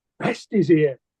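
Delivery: ordinary talk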